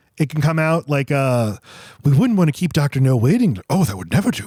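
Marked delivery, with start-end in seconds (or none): 2.1-4.5 catty, dismissive, disdainful delivery. Showing how a film spy can come out catty: imitating Sean Connery's catty Bond. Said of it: "he can be really catty".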